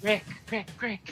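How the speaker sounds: ethereal, ghostly, echoing phantom voice. Voicing a phantom calling down from the shadows: ethereal phantom voice. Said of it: "Echoing, and it's echoing off of every wall".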